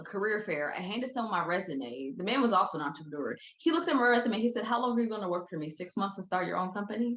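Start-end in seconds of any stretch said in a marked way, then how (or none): 4.6-7.2 fast, straight-faced, flat, acted-out deadpan. Recalling an entrepreneur at a career fair who looked at their resume: mock deadpan. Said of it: "Straight face, deadpan asked me that".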